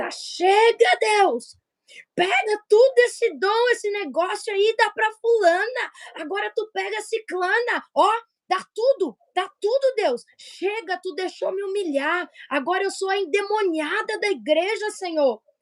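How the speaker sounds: despairing, high-pitched, fed-up outcry. Speaker recalls feeling humiliated and crying out to God at home, retelling own past shouting. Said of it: "eu comecei a gritar".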